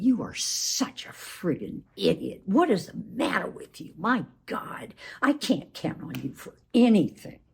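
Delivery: belittling, scornful, contemptuous insulting tone. Showing how a partner sounds when speaking with contempt; contemptuous tone. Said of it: "we would put it in the category of contempt. It sounds like this".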